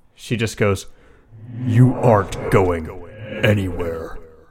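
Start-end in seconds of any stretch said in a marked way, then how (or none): 1.7-4.2 deep voice, not her usual voice. The storyteller voices a woman who suddenly speaks in a deep voice, not her own. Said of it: "in a deep voice that's definitely not hers".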